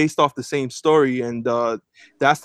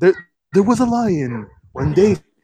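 put-on narrator voice, slightly higher-pitched; 6 semitones higher than usual. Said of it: "he speaks, like, a little higher, and he's like".

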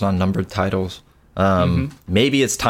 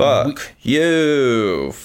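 bad put-on New York accent, you drawn out; 5 semitones higher than usual. Saying a mock hostile sign-off: terrible New Yorker "fuck you". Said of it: "a terrible New Yorker "fuck you"".

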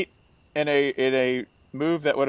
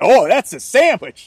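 put-on Pittsburgh accent, raised volume; 8 semitones higher, 7 dB louder than usual. Imagining how a man would react to a sandwich, put-on Pittsburgh accent. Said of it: "I just listen for his Pittsburgh accent".

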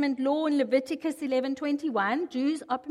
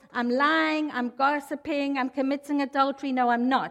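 normal talking voice

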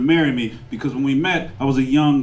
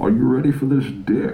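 put-on villain voice. Comedian acting out his own line in a joke, weak Bane impersonation. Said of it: "just so I could do a weak ass Bane impersonation".

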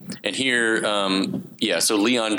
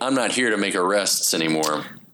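normal talking voice

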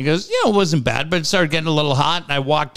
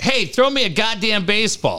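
loud yell at a higher pitch; 6 semitones higher than usual. Retelling how someone yelled at the right fielder: imitating someone yelling. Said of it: "so busy yelling at the right fielder".

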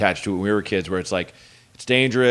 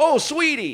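put-on very high, squeaky little boy voice. Retelling a comedian's bit where a kid crashes into him: Chris Fairbanks saying it like a little boy. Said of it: "it just came out like a little boy".

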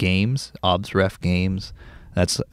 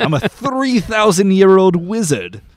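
villainous British voice, much higher and louder; 12 semitones higher, 6 dB louder than usual. Pitching a voice for the wizard Lord Aether, the speaker tries an evil British Lord Aether voice. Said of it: "go evil British voice for Lord Aether".

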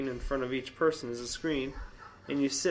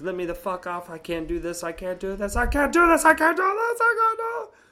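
very loud, frantic, rising panicked screaming; 8 semitones higher, 9 dB louder than usual. Retelling a panic on a ride to his wife: re-enacting his own panicked screaming. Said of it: "I'm sitting there screaming".

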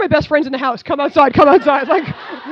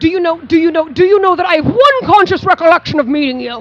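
mock rude delivery, pitched higher; 3 semitones higher, 4 dB louder than usual. Retelling how a man kept saying a line: imitating someone saying it rudely. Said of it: "he kept saying it in such a shitty way".

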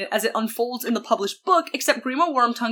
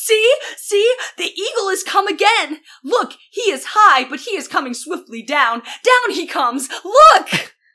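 put-on high, thrilled, eager excited shout; 7 semitones higher, 7 dB louder than usual. Speaker retells a scene about the Eagles: retelling Legolas's excited shout. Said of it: "Legolas gets all excited and shouts".

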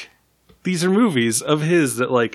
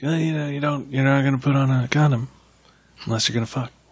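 calm, cool, unruffled delivery without fury; 3 dB quieter than usual. Joking about how another actor would say a movie line: Michael Madsen impression. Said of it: "That was my Michael Madsen impression".

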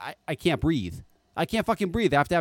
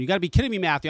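normal talking voice

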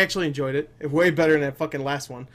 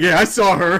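raised, heavily sarcastic tone; 3 semitones higher, 7 dB louder than usual. Imitating how the other person said it: mock-sarcastic. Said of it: "The way you said it sounded like you're being sarcastic. Like".

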